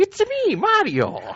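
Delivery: squeaky, very high-pitched video-game hero voice. Starting the game reviews on Super Mario Galaxy: Mario voice. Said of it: "in my best Mario voice".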